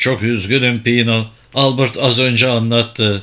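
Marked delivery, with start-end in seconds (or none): none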